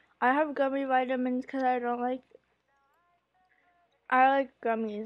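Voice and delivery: speaking while chewing, mouth full of food. Back from taking gummy vitamins, talking while chewing. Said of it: "I'm still chewing".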